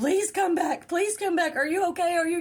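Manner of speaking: high, tearful, freaked-out, sobbing, pleading tone. Retelling a boyfriend sobbing as she woke, imitating sobbing. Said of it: "he is sobbing".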